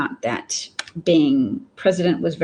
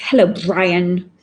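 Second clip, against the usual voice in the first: put-on lisp, said louder; 5 dB louder than usual. Imitating a Roman leader from a film greeting Brian: lisping Roman leader from Life of Brian. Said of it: "a Roman leader in the movie has a lisp".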